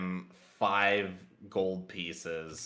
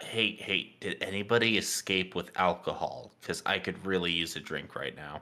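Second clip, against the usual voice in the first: secretive, fully voiced stage whisper. Leaning in to half-whisper to another character, asking about alcohol: half-whispering in character. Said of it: "I'm gonna whisper to him".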